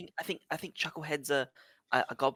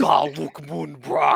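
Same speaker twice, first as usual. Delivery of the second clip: booming, rough, harsh, creaking demonic voice; 10 dB louder than usual. Voicing a tiny fairy speaking Infernal: booming demonic voice. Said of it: "this booming demonic voice".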